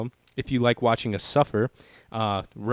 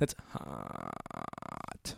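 very soft, low, creaky vocal fry; 16 dB quieter than usual. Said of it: "Like the vocal fry".

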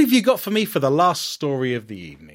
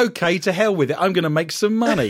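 plain

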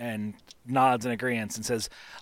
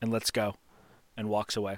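ordinary talk, nothing marked

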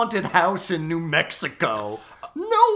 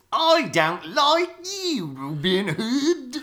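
very slow, high, drawn-out attempted English accent; 6 semitones higher than usual. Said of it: "trying to approximate an English accent".

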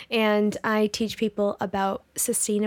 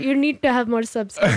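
loud put-on Pakistani accent; 2 semitones higher, 6 dB louder than usual. Speaker quotes what a man told them, put-on Pakistani accent. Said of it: "in his Pakistani accent".

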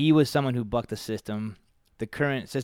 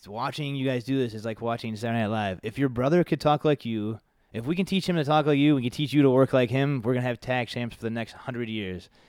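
usual speaking voice

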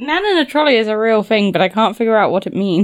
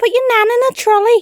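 very high-pitched Scouse Liverpool accent; 13 semitones higher, 4 dB louder than usual. Asked to do an accent, saying the one line she can, in a liverpool accent. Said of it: "I can only do the Liverpool accent if I say one line".

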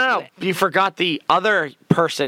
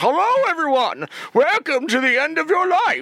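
put-on menacing villain voice, higher; 12 semitones higher than usual. Retelling a vampire's evil speech to the crowd: Bane-like villain speech. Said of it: "his speech was Bane's speech".

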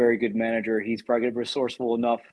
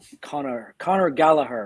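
put-on Irish accent; 3 semitones higher than usual. Podcast host saying a footballer's name, irish accent. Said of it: "There's my Irish accent".

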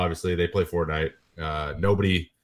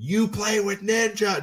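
put-on child's very high, stretched, drawn-out shriek. Retelling how a kid reacted on recognizing the speaker; retelling a kid's scream. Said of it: "just screamed it at me".

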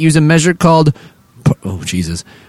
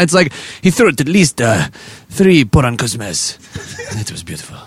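put-on Finnish accent, sounding Spanish; 3 semitones lower, 4 dB quieter than usual. Joking about Finnish football, trying to do a Finnish man's voice: attempted Finnish accent. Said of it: "I don't know why I sound like a Spanish".

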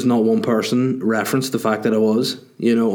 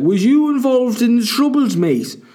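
bad put-on Liverpool comedian voice, higher pitched; 12 semitones higher than usual. Retelling a TV show scene in Belfast, voicing John Bishop: terrible John Bishop impression. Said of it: "The most insulting and terrible John Bishop impression ever".

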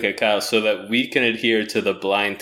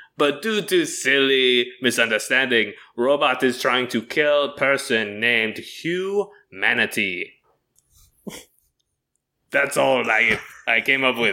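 put-on, fake French accent; 2 semitones higher than usual. Pitching a movie idea in character as a French visitor: put-on French accent. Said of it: "to do an impression".

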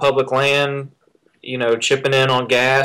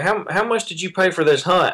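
high, play-acted, patronizing, condescending talking-down voice; 5 semitones higher than usual. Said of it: "in a very condescending way".

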